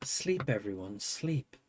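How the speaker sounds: gentle, soft, low, soothing dulcet murmur. Late at night, speaker imitating quiet people, mimicking dulcet tones. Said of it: "talk in dulcet tones".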